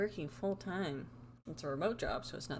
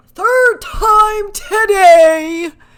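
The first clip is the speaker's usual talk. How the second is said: very loud, very high swooping yell, today stretched; 29 dB louder than usual. Speaker complains to a listener that the internet went out again, yelling. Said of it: "Sorry, I'm yelling at you".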